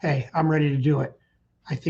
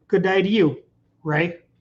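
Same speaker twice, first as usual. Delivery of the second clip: poor put-on Australian accent attempt; 2 semitones higher than usual. Answering a greeting from Ray in a video: poor Australian accent. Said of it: "That's my poor Australian accent".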